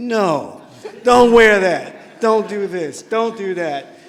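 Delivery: put-on stern, deliberate scolding tone, very loud and slow. Remembering Miss Branch as not the quiet type, imitating Miss Branch's firm scolding. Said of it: "not the quiet, just be like this. She was really like".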